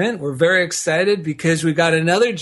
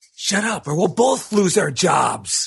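very slow, drawn-out hissed delivery. Delivering a joke's punchline as the lion: hissing lion. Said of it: "places his paws on his chest and hisses".

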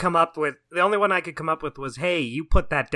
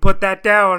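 stern, booming voice, very loud; 3 semitones higher, 9 dB louder than usual. Showing how a character's line should be delivered, as a stern warning. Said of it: "You have to say it like sternly in a stern warning".

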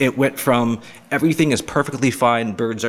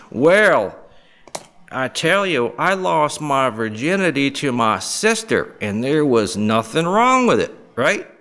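drawling Southern U.S. American accent; 3 semitones higher than usual. Showing how people always imitate someone stupid: Southern drawl accent. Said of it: "It's always the Southern drawl accent".

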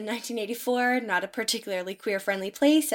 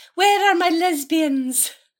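put-on old Welsh lady accent, much higher; 8 semitones higher, 6 dB louder than usual. Praising a film's accents, quoting a line in a little old Welsh lady voice. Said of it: "a little old Welsh lady going".

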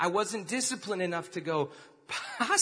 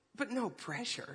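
kind warm tone, quieter; 2 semitones higher, 9 dB quieter than usual. Retelling how dad closed the door on his dream: imitating dad, Minnesota-nice kind way. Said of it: "in a very Minnesota, nice, kind way".

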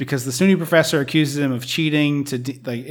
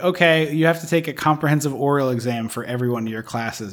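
ordinary talk, nothing marked

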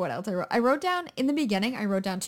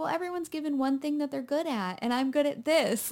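put-on earnest sincerity, pitched higher; 5 semitones higher than usual. Retelling a film character's line during sex: imitating earnest sincerity. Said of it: "very earnest puppy dog eyes and just being like".

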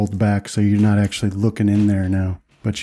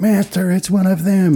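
very high-pitched, panicked, alarmed cry; 10 semitones higher than usual. Describing a scene, imitating a character calling to his master in a panicked voice. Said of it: "he's got like panic in his voice".

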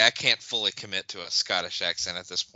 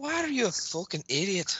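bad put-on accent, sounds Irish, much higher, quieter; 12 semitones higher, 4 dB quieter than usual. Retelling what a woman said to him; bad accent, comes out Irish. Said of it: "since when's the good lady been Irish?".

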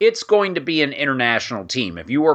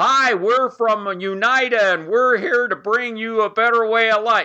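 loud, high, overbearing put-on American voice; 8 semitones higher than usual. Caricaturing someone who comes through a portal to the natives: mock loud talking in English. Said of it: "talking in just loud in English".

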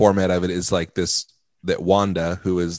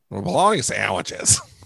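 shrill, put-on sitcom character voice; 2 semitones higher than usual. Showing the others an impression of Roseanne: Roseanne impression. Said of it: "presentation of my impression".

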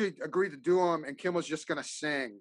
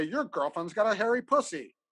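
synthetic robotic computer voice, pitched up; 6 semitones higher than usual. Recalling what the computer voice would say when the speaker walked in: imitating a computer voice. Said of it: "the computer voice would say".

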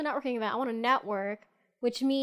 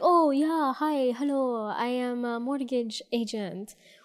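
slow, put-on Persian accent. Describing people at networking events, the speaker mimics one in a put-on accent. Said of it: "Is that their accent?".

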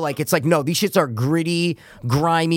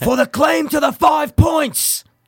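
put-on almost British villain voice, higher pitch; 11 semitones higher, 3 dB louder than usual. Quoting a movie's opening scene: Bill the Butcher voice. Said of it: "I was actually doing Bill the Butcher".

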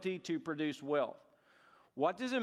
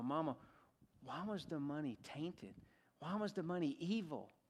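put-on hushed, childlike half-whispered words; 9 dB quieter than usual. Retelling a boy poking his mama to ask her something: imitating a half-whisper. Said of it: "he whispers to his mama".

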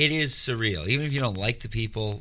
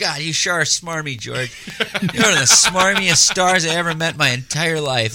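put-on high, loud, fifties old-timey kid voice; 6 semitones higher, 7 dB louder than usual. Retelling meeting a movie star, the speaker addresses him talking like a 50s kid. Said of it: "Like I was trying to talk like I was a 50s kid who meets Babe Ruth".

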